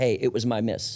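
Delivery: ordinary delivery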